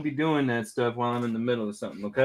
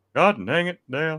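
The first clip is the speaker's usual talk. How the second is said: tight, tensed cartoon voice with no air; 4 semitones higher, 3 dB louder than usual. Showing how the voice should be tightened: tighter Hank Hill voice. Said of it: "you gotta tighten it up".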